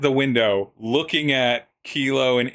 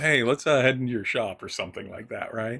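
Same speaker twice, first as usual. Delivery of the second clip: put-on calmer voice, quieter and faster; 4 dB quieter than usual. Retelling what Kilo said after suddenly being muted, imitating Kilo, less panicked. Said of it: "in a less panicked voice".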